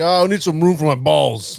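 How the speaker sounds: mock southern drawl voice. Doing a quick impression while listing presidents: LBJ impression. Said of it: "presidents that you would wanna do great impressions of".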